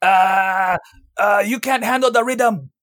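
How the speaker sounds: very high, slow voice with long drawn-out uh. Doing an impersonation after a talk about the fighter GSP: GSP impersonation. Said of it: "That was my G S P impersonation".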